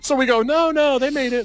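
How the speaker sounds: high, rushed, hurried reassuring tone.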